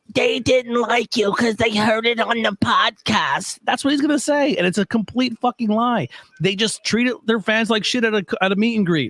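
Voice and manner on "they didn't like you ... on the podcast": really creepy, unsettling put-on voice. Acting out what he expects someone else to say: imitating a really creepy voice. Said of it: "he's gonna come in with this really creepy voice".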